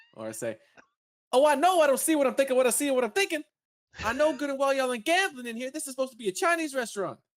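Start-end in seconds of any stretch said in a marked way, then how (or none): 1.3-7.2 very high, loud, raised ranting character voice. Doing an impression of a movie character for a viewer's request: impression of a movie character. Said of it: "that was a good impression".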